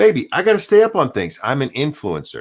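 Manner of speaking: joking tone. Retelling what they said to her over lunch, retelling a joking remark. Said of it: "jokingly I said to her".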